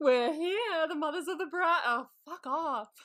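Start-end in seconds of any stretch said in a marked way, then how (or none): 0.0-1.8 put-on, high, dramatic, theatrical grand proclaiming voice. Imitating the mothers of the bride entering: imitating a dramatic entrance. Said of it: "Very dramatic as they enter".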